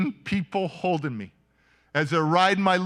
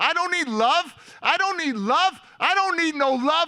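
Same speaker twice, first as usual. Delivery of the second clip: very high-pitched, shrill scream; 10 semitones higher than usual. Retelling resisting a group hug: imitating his own screaming. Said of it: "And I'm screaming".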